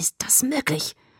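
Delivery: breathy, hissing whisper. A narrator reads a man confronting a woman who says she saw nothing, hissed. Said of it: "zischte er".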